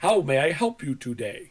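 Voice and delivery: put-on, exaggerated over-enunciating delivery. Retelling a call to tech support: imitating over-enunciating support staff. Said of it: "they're over-enunciating everything".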